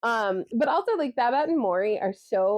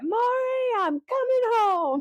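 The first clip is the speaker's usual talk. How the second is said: acted rough gravelly voice; 13 semitones higher than usual. Quoting a favorite TV character while praising her: Babette's gravelly voice. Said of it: "her gravelly voice".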